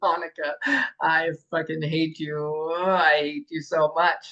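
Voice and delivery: slow, loving, playful mock-teasing tone. Showing an audience how tone changes meaning: affectionate playful "i hate you". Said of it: "Different tone".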